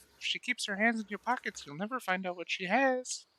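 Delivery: high, hushed, barely audible under-breath half-whisper. Slowly walking away as Penny looks around, half-whispered under breath. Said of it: "whisper under my breath".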